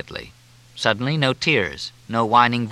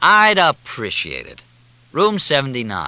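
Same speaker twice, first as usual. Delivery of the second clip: lazy, deliberate drawl; 3 semitones higher, 3 dB louder than usual. Narrator reads Fletch's line to Walt in a dark bar, drawling. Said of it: "He drawled".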